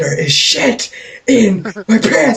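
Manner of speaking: screaming, high and stretched. Speaker acts out what they screamed while crab walking, retelling own screaming. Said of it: "and the entire time I am screaming".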